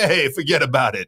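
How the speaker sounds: put-on strong, heavy New York accent. Recalling how they talked in an old movie, in a heavy new york accent. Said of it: "I just talked with a heavy New York accent".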